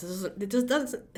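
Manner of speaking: stuttering speech. Explaining the Five of Swords card, stuttering. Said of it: "sorry, I'm stuttering".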